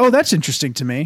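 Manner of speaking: normal talking voice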